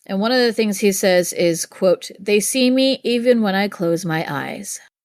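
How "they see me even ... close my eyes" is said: usual speaking voice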